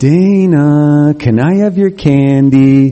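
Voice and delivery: very slow, syrupy sweet, acted-out voice. Speaker retelling how their brother asked for their candy: imitating a sweet voice. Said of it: "He came up with a sweet voice".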